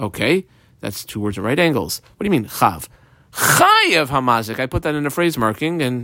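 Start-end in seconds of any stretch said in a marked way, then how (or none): 3.3-4.6 one word stressed hard, said slowly. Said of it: "emphasize the word Chayev".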